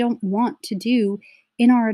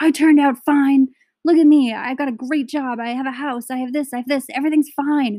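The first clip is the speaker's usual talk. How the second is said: put-on screaming, higher pitch; 4 semitones higher than usual. Retelling what clients in crisis counseling said: imitating clients screaming. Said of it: "They're, like, screaming at me".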